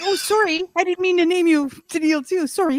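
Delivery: very high-pitched, put-on Canadian accent. Joking about Canadians all named Tennille, the speaker puts on a Canadian accent. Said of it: "Can you do that accent again".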